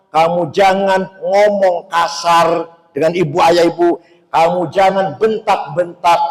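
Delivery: normal talking voice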